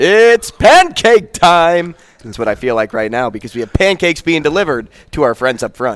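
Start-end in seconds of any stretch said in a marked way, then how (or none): 0.0-1.9 big booming yell, loud and high. Remembering Trembley at a cousin's high school games: Trembley's big booming shout. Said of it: "big, booming voice. And he would just scream out".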